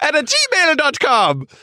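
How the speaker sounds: put-on Italian accent. Giving the show's email address, in an attempted italian accent. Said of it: "it's Scottish, not Irish".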